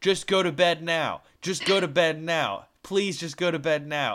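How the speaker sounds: calling out loudly, over and over. Retelling urging her off the couch to go to bed: imitating own yelling. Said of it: "I just yell at her".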